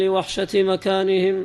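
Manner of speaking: ordinary talk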